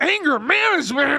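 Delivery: furious, seething, loud, high-pitched fuming outburst. Retelling how a friend reacted while reading a letter: imitating someone fuming. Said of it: "he is freaking fuming".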